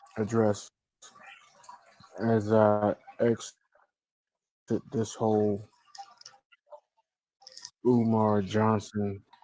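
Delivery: slow, tired-sounding, sluggish weary speech. Addressing viewers in a video about leaving: slow, tired-sounding voice. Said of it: "Why does he sound so slow, like, tired?".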